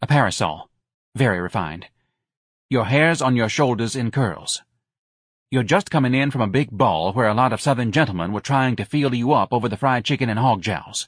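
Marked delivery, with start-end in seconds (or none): none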